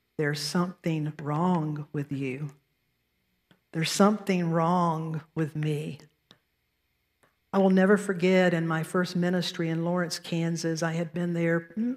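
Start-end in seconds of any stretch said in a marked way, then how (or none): none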